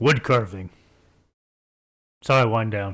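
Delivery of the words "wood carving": very abrupt, curt delivery. Voicing a character answering a question, said very abruptly. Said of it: "He says very abruptly".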